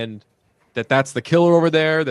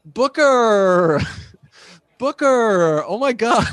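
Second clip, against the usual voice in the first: put-on overdone teen girl voice, high, very slow, drawn out; 9 semitones higher than usual. Retelling a killer overplaying a teenage girl: imitating overdone teenage girl talk. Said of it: "way overdoing, like, all of the teenage girlisms".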